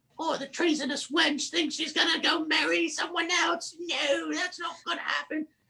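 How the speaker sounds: high-pitched, mock-regal muttering under the breath. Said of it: "just kind of muttering under her breath".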